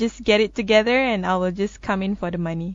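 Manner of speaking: normal talking voice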